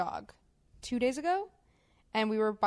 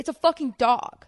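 mock harsh, hostile, very loud aggressive snap; 4 semitones higher, 8 dB louder than usual. Retelling a woman snapping at the speaker's boyfriend, imitating aggressive snapping. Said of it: "was aggressive with him".

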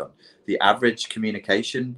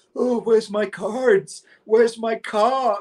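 dazed, slow, foggy stoner voice, very high; 13 semitones higher than usual. Retelling waking up the next day after losing the cards: imitating a dazed stoner. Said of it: "like a stoner the next day going".

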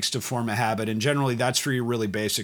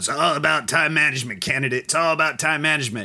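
gravelly officer-school drill instructor voice; 3 semitones higher, 4 dB louder than usual. Recalling the instructor at officer candidate school, gravelly drill instructor voice. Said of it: "gravelly drill instructor voice".

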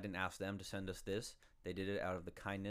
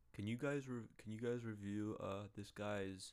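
put-on sick voice, much slower. Reading out a request from a friend sick in bed, Tyler impression. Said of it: "That's not a good impression of Tyler's".

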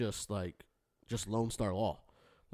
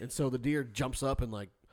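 ordinary talk

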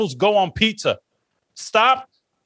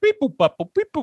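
pitched-up beeping robot noises; 5 semitones higher than usual. Mocking another speaker's trash talk: imitating robot talk. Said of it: "this robot bullshit".

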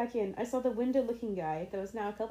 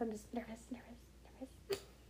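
whispered under breath, much quieter; 14 dB quieter than usual. Imagining someone walking past people while saying this, whispering under breath. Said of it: "I'm like whispering like under my breath".

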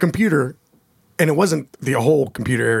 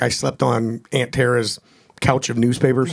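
ordinary talk

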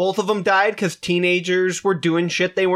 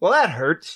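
ordinary delivery

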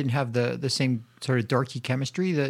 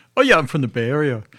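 raised, put-on New York accent; 8 dB louder than usual. Retelling a film scene between two characters, in a New York accent. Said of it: "like with this New York accent".

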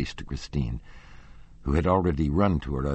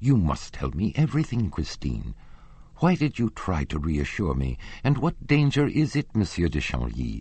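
plain reading voice

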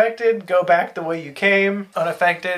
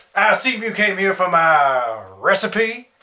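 put-on ghostly old Southern gentleman voice. Narrator voicing a ghostly figure who appears before the group, old southern gentleman voice. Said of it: "a ghostly spectral figure appears before you of an old southern gentleman".

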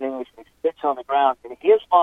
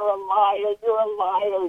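put-on high, very slow, drawn-out angry yell; 7 semitones higher than usual. Retelling how a detained man yelled at the speaker: imitating someone yelling. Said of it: "So he starts yelling".

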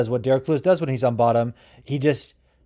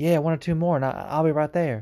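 put-on southern US accent; 3 semitones higher, 3 dB quieter than usual. Quoting a fighter about a title shot, as a Wonder Boy impression. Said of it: "That's my Wonder Boy impression. It's not very good, but it's basically just like a really nice southern dialect".

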